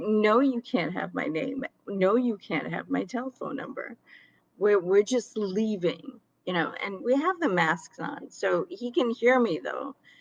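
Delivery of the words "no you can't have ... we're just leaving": usual speaking voice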